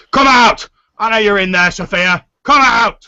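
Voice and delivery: gruff, rough shout, very high and loud. Game master voices someone hammering on the door, calling to Sophia: gruff voice. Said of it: "this gruff voice going".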